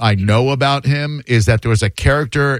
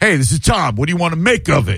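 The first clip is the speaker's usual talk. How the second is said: daring, standoffish, higher-pitched tone; 5 semitones higher than usual. Mimicking how the caller just greeted him: imitating Tom's standoffish greeting. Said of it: "you said that very standoffishly, Tom".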